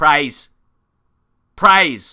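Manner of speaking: loud commentator shout. Commentating a game, calling out the in-game shout: shouting. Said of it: "Are you wondering why I'm shouting?".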